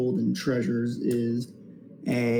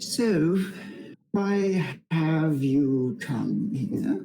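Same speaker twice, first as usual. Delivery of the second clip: put-on old giant dragon voice; 4 semitones higher than usual. Game master voicing an ancient blue dragon addressing the party, ancient dragon voice. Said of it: "and you hear it speak".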